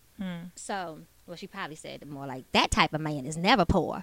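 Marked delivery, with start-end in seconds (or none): 2.5-4.1 small, dainty little voice. Retelling a woman's reply in a conversation, in a little Whitley Gilbert voice. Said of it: "with her little voice".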